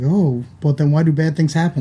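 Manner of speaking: ordinary talk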